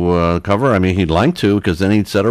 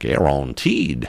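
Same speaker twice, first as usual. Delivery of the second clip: clumsy, bad, put-on Louisiana accent; 5 semitones lower, 4 dB quieter than usual. Explaining pension interest rates, in a bad louisiana accent. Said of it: "to use my bad Louisiana accent".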